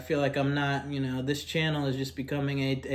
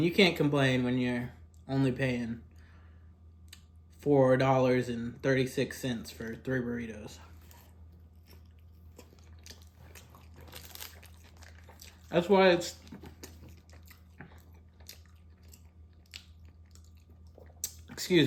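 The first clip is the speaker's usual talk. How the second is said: speaking with mouth full, slower. Speaking while eating burritos, talking with mouth full. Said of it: "I'll try not to speak with my mouth full".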